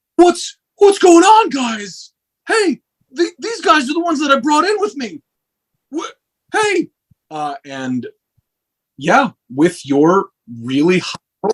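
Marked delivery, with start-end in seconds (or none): 0.2-6.9 very high-pitched, stammering voice. Voicing a guard who comes back up the stairs: Adon the guard's voice. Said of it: "And he's like".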